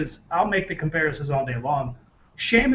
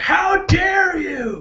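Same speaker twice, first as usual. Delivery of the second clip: very high-pitched, angry scream; 13 semitones higher, 6 dB louder than usual. Retelling how Paul Heyman reacted at the end of the match: imitating Paul Heyman screaming. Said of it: "screaming at Sheamus".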